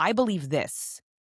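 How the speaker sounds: falling tone landing on "this". Practicing voice inflection on a statement: falling pitch on this. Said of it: "No, downward inflection".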